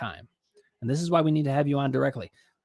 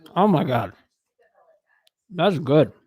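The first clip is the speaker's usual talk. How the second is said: chewing while talking, louder; 4 dB louder than usual. Talking between bites of pizza during a commercial: talking with mouth full. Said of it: "try not to talk with my mouth full".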